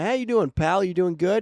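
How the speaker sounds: loud, light Midwestern accent. Demonstrating a classic greeting accent in conversation: slightly midwestern accent. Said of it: "it's like Midwestern inherently?".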